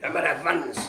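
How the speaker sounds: put-on Welsh accent.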